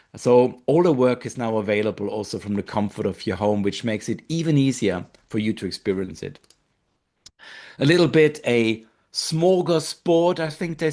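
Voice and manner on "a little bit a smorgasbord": terrible put-on Swedish accent, slow and high. Speaker describing a selection to listeners, in a terrible swedish accent. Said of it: "I'm sure it was a terrible, terrible accent".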